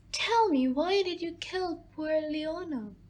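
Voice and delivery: syrupy cloying sweetness. A woman who should be far away confronts the narrator, sickly sweet voice. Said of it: "she said in a sickly sweet voice".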